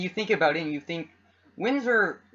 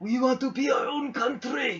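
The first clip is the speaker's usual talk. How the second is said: wheezy, high-pitched, badly faked Italian accent; 8 semitones higher than usual. Describing Canada's regions, voicing Quebec as the Godfather: wheezy Italian impression. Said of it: "like speaking like an asthmatic man in a".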